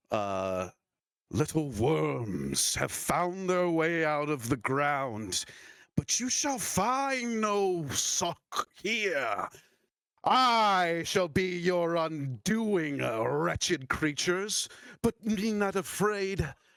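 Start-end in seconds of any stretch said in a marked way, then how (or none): 1.3-16.4 put-on witch character voice. Voicing the Rust Witch as she speaks to the players: Rust Witch voice. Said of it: "she goes".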